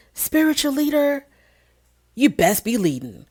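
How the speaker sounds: calm, almost serene delivery, slightly high voice. Quoting what the aunt said next: imitating Aunt Liz's almost serene voice. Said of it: "this almost almost serene voice coming from Aunt Liz saying".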